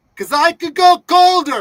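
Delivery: shrill, loud taunting shout. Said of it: "you will yell out the window".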